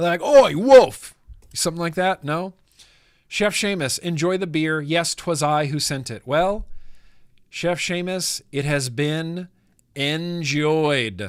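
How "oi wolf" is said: put-on very loud, high barking dog voice with British accent. Replying to a viewer's message about their British dog, in a British dog accent. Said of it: "bark with a British accent".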